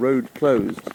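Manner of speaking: plain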